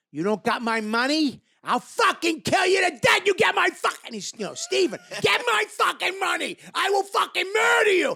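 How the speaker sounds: very high, rising, really angry voice. Retelling a scene partner's line in a school scene, imitating Steven's angry threat. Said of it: "really angry".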